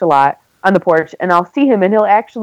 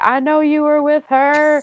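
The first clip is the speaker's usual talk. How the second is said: high, acted-out screamed voice; 8 semitones higher than usual. Describing a stranger's girlfriend banging on the doors at night, retelling a screamed accusation. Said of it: "screaming fights ... banging on the doors like".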